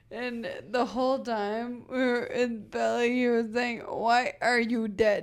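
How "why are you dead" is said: put-on thick Nigerian accent, louder. Retelling a priest at a grandmother's funeral: imitating a thick Nigerian accent. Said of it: "He had a very thick accent".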